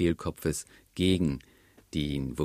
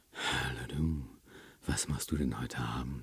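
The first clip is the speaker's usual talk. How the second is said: airy, soft, breathy and hushed; 5 semitones lower, 9 dB quieter than usual. Example of a voice that sends a particular signal: soft, breathy voice. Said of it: "Auch das wäre in gewissen Situationen dann wieder angemessen".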